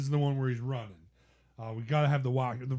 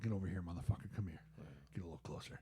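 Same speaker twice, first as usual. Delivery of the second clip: breathy, hushed whisper; 6 semitones lower, 13 dB quieter than usual. Retelling a movie scene, quoting Adrian pulling Rocky closer: imitating Adrian. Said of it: "She's like".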